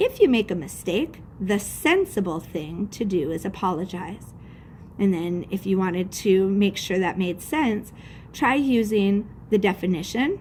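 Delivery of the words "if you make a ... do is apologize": ordinary talk, nothing marked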